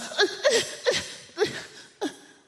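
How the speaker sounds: mock very high, flustered, stumbling stammer. Retelling a woman on a train fumbling for words, imitating flustered stammering. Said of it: "she gets flustered".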